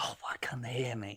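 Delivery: unvoiced whisper. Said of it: "I've just shouted at the top of my voice".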